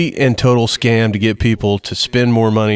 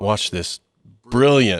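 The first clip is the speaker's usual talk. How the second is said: sarcastic, mocking tone on "brilliant"; 3 dB quieter than usual. Describing an exchange seen while scrolling Facebook: sarcastic "brilliant". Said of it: "I say that as sarcastically as possible".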